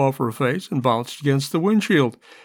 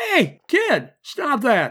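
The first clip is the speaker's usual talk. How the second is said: very high, very slow, swooping shriek; 10 semitones higher than usual. The other driver in a crash addresses a kid jumping on the cars, shrieking. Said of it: "the other driver shrieked".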